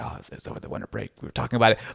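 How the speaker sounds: soft, breathy whisper. Retelling a reply to Checo's question: imitating Daniel whispering. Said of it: "you can tell he's kind of whispering".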